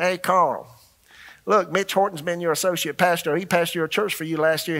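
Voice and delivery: quick South Carolina twang throughout. Retelling how the organization's founder called a pastor, in Houston Miles's southern twang. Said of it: "he just got this southern twang about it".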